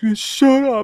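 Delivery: acted out, teary, sniffly crying voice, high, loud. Retelling a tearful moviegoer's retort after being teased: imitating sniffly crying. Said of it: "got his sniffles and everything".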